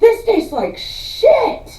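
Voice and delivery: very high-pitched, slow outburst. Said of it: "he goes".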